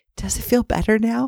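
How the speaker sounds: put-on little child's high, gentle, voiced stage whisper. Retelling a child's question in bed: imitating a half-whisper. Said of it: "then she whispers to me".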